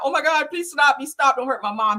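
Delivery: high, frantic, freaked-out, desperate voice. Retelling a teenage son's pleas as police cuff his mom: imitating a frantic teen. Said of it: "He's like that, uh, very frantic".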